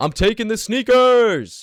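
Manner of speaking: very high, drawn-out, playful joking yell. Retelling a joke at a party that fell flat, reenacting a joking yell. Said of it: "and yelling".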